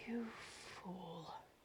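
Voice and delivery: very quiet, muttered half-whisper under the breath. Voicing a character reacting after being healed: half-whisper under his breath. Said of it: "you hear him whisper under his breath".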